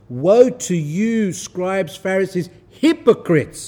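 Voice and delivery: mock stern, condemning, strong and forceful tone. Speaker quotes him rebuking the scribes and Pharisees: retelling a strong rebuke. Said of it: "meaning he said it strongly".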